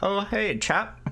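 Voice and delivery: poor put-on Scottish accent. Imagining what he would say after breaking his head, bad british impression. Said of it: "You do not do a good British impression".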